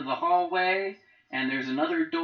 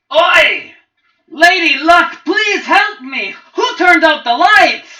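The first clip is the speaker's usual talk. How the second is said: frantic, very high, very loud panicked scream; 14 semitones higher, 16 dB louder than usual. Voicing the innkeep calling for help from downstairs: innkeep screaming for help. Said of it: "all of a sudden he screams".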